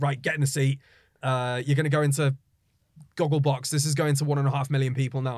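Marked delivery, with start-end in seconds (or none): none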